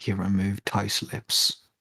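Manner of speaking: slow, drawn-out, hushed whispered aside. Voicing a character who whispers an explanation to another: whispering. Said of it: "whisper in and be like".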